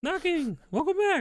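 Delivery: very high-pitched put-on character voice. Voicing a lieutenant who greets the player's returning character; really high-pitched voice. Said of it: "he's got like a really high pitched voice".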